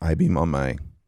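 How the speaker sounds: voice breaking mid-phrase. Talking about an i-beam, voice cracking. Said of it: "my voice cracked".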